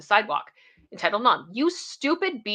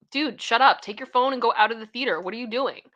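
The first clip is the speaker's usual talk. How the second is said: put-on heckling yell, telling off; 2 semitones higher than usual. Retelling what moviegoers yelled at a man on the phone: imitating people yelling. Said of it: "people started yelling at him and was like".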